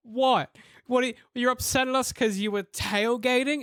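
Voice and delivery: acted words broken by laughter. Retelling a woman's reply to an angry tailgating driver, imitating someone laughing while talking. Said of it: "She's like pissing herself".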